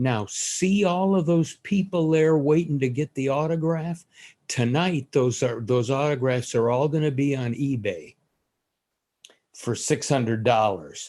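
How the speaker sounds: mildly sarcastic tone, acted out. Retelling what the man running the program said: imitating a sarcastic tone. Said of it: "with some sarcasm in his voice".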